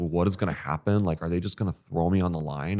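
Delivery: put-on panicked voice. Retelling walking to a first shift, freaking out: retelling own past panic.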